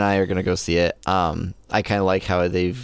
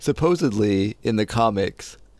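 words spoken through a yawn; 3 semitones higher than usual. Discussing a superhero and the comics, yawning. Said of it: "sorry, yawning there".

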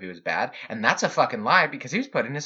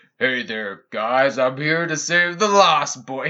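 put-on old screen-legend leading-man voice; 4 dB louder than usual. Joking about adults playing Peter Pan: John Wayne impression. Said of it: "doing a John Wayne impression".

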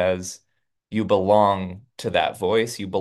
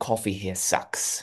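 near-whispered, breathy, hushed put-on British accent; 7 dB quieter than usual. Quoting a character's line while retelling a TV episode: British accent. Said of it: "You got a pretty good British accent".

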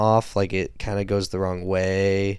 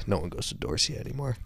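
mock mutter under the breath, much quieter; 8 dB quieter than usual. Retelling a character's remark over his shoulder, retelling a mutter under his breath. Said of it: "under his breath".

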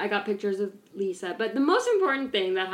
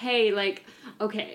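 plain

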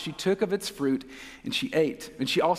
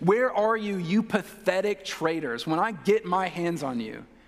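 put-on voice full of open hatred; 3 semitones higher than usual. Acting out God calling to Adam and Eve: put-on hateful voice. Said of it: "with hatred in his voice".

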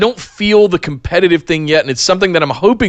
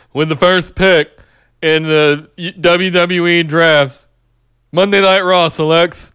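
bad robotic announcer voice, flat monotone, very drawn out. Imitating a draft announcer reading the first pick: terrible Roger Goodell impression. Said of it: "my terrible Roger Goodell impression".

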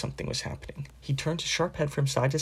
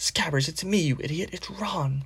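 sharp hissing, rebuking tone; 3 semitones higher than usual. Ron hisses at Scabbers, his rat, which keeps trying to bite him: hissed. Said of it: "Ron hissed".

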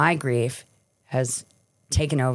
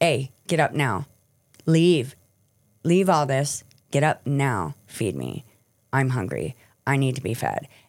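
bossy, commanding, demanding voice with swooping pitch. Describing addiction as a gun to the head, voicing addiction giving orders. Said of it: "it's making me".

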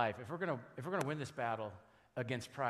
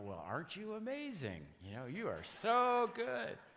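sarcastic, mocking, over-sweet high sing-song; 9 semitones higher than usual. Speaker recalling his wife's reply when he takes credit, imitating sarcastic praise. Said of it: "she'll roll her eyes sarcastically and go".

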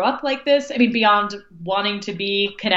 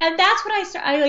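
ordinary delivery

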